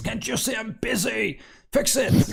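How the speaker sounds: shrill, very high, impatient yell. Narrating the scene, the speaker voices Vifir answering the ogre: Vifir shouting. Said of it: "Vifir shouts".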